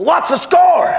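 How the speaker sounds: high, slow, shouted voice.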